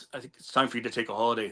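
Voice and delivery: muttered under breath. Retelling what a man told you in your house that night: muttered under his breath. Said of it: "under his breath".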